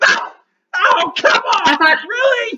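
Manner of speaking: very high, very loud, gasping, pained, exasperated cry. Narrator voicing Snitch as an arrow lodges in his shoulder; Snitch gasping and panting. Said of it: "he's like gasping and panting, and then suddenly an arrow lodges itself in his shoulder, and he's like".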